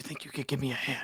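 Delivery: speaking in a whisper. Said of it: "Why are we whispering?".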